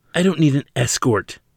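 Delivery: dismissive, growling, high pitch. Shrugging off an agent who took her arm, she answers, growled. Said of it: "she growled".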